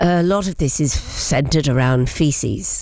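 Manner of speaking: slow, very serious voice. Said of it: "in a very serious voice".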